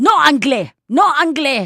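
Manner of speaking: put-on irritated, angry, loud, high-pitched. Acting out people answering a question asked in French: mock-angry. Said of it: "like very angry".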